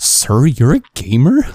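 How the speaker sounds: heaviest possible sarcasm, loud and drawn out. Retelling what a guy said on seeing Minecraft on a laptop: imitating a sarcastic voice. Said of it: "in the most sarcastic voice that i've ever heard".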